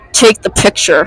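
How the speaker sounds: low, voiced, muttered stage whisper. Retelling what he said as the sister looked up, whispering under his breath. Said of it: "he whispers underneath his breath".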